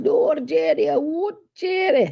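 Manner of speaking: put-on poor Scottish accent. Retelling Chris's reply, imitating Chris in a bad Scottish accent. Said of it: "That's my really bad Scottish accent".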